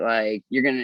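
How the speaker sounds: ordinary talk, nothing marked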